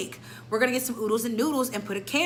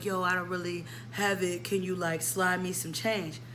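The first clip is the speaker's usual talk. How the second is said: low, hushed half-whisper; 4 semitones lower, 5 dB quieter than usual. Quoting what he half-whispered in the speaker's ear after his card got declined, in a half-whisper. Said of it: "He whispers in my ear".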